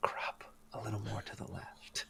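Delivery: very quiet, very soft whisper, close to the ear. Acting out Frederick giving advice during pre-visualizing, whispering in someone's ear. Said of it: "in your ear whispering like".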